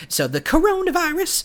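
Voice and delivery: funny tone of voice.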